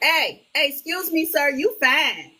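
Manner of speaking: playful, high, drawn-out loud yell. Retelling calling out to someone across a grocery store: imitating own yell across a store. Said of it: "I yell across the store".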